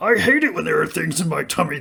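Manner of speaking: loud, fast, rattled-off demonic voice. Describing a scene where she eats glass, doing the Deadite demonic voice. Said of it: "the Deadite demonic voice thing".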